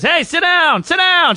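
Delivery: put-on very high yell, repeated. Speaker retells a lady yelling from the cockpit area: imitating a lady yelling. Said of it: "She's like yelling at me".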